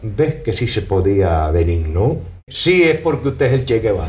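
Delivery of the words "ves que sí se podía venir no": play-acted very low, wry, ironic little voice. Quoting Che Guevara after Che did what he'd said couldn't be done: retelling Che Guevara's ironic little voice. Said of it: "con una vocecita irónica".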